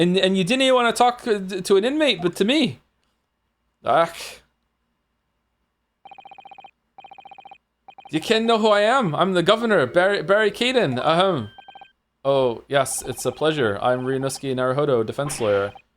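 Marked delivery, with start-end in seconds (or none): 0.0-11.0 put-on poorly done Scottish accent, pitched high. Voicing a prison governor in a game: bad Scottish accent. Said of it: "I can't do a Scottish accent".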